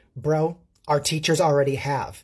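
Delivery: plain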